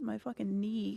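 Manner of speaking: wincing in pain. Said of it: "I'm wincing in pain".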